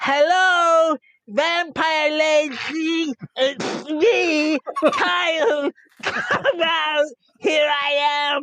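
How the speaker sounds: calling out, projected across a distance. Player character marches out of the forest to draw someone out; yelling. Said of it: "and I will yell".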